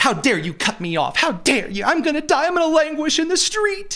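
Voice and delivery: put-on very high spoiled, entitled rich kid voice. Mocking people who act entitled once cut off, imitating an entitled spoiled child. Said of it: "they're like entitled little spoiled rich children".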